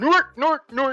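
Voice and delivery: very high pitch, belted out loudly. Saying a golf course name the way the text says to: Swedish Chef voice. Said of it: "say it just like the Swedish chef from the Muppets".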